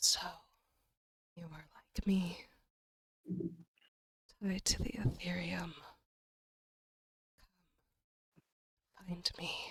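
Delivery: faint, soft whisper drifting in from afar. Voicing a faint whisper heard in the distance: faint whisper. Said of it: "You hear a faint whisper in the distance".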